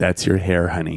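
very softly spoken. Retelling what she told him, very quietly. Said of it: "she's very quietly has this little".

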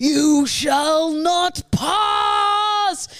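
loud, very slow, booming delivery, "pass" drawn out. Acting out a ring quest, meeting Gandalf: Gandalf voice. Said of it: "Is that Gandalf?".

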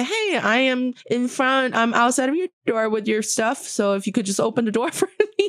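cute, high little robot voice. Describing a front-desk delivery robot calling a guest's phone: cute little robot voice. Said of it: "the little robot voice in the phone will say".

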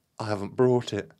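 aghast, loud, horrified crying out. Told the wooden chalice is needed, Marion exclaims in horror. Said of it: "she exclaimed in horror".

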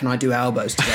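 usual speaking voice

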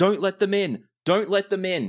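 very high, loud, frantic screamed shouts. A game master voices guards as the players reach the door: guards screaming. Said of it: "you hear guards screaming".

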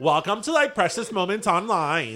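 put-on ditzy Valley Girl voice and accent. Joking about how a precious moments podcast would sound: valley girl voice. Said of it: "like, a Valley Girl".

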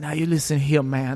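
put-on broad, heavy Louisiana accent with strong twang. Imitating Steven Seagal calling someone man: Steven Seagal impression with Cajun accent. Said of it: "he's got a big, um, Cajun accent".

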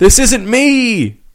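play-acted, very high-pitched, shrill yell. Imagining a scene where someone's arm moves on its own: imitating Alger yelling. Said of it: "and Alger was yelling".

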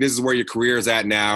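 normal talking voice

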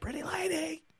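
put-on very high-pitched yell, called out loudly. Watching a scene, quoting a character trying to get a woman's attention, retelling a yell. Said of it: "I love when he just yells out".

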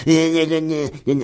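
mocking high babble. Mocking how Jean-Jacques Bourdin talks into his microphone: mocking Bourdin imitation. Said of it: "et il parle comme ça".

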